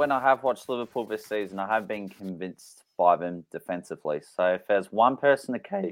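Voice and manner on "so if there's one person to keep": sudden voice crack mid-phrase. Giving an opinion on which Liverpool player to keep, voice crack. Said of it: "that was a great voice crack".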